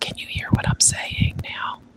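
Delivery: whispered. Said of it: "I just wanna know if you can hear the whisper".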